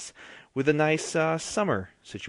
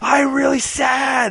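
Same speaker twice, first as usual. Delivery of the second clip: shrill, high, mournful yell, sadly drawn out; 12 semitones higher, 9 dB louder than usual. Asking whether every line has to be yelled, trying it out by yelling sadly. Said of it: "So everything has to be yelled?".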